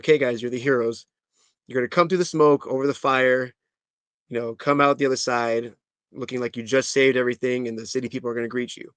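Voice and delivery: ordinary talk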